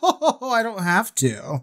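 high, slow, smug brush-off. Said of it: "so smug and shit".

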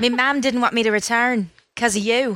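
terrible put-on Irish accent. Joking with others about Irish and Scottish accents; bad Irish accent. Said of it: "That was terrible, too".

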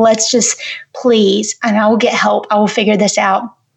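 put-on begging, pleading voice. Retelling a talk with her parents, imitating own past begging. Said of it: "I was just begging them".

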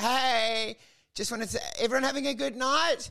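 mock needy crowd-pleasing tone. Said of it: "like a needy person looking for reassurance".

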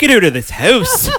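shrill, high yell in put-on Canadian accent. Retelling a woman's reply to her, in a Canadian accent. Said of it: "I'm going to do it in a Canadian accent".

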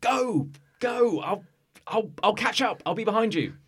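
urgent, drawn-out yell pitched way up. Voicing a fighter urging Capella to run ahead: shouting. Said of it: "he shouts to you".

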